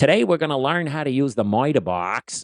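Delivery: put-on heavy, broad Boston accent, laid on thick. Retelling what a middle-school woodshop teacher told the class, thick Boston accent. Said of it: "had the thickest Boston accent".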